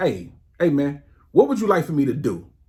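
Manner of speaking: acted irritated retort. Retelling a reply to a coworker who mocked the salad: retelling snapping at someone. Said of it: "I snapped immediately".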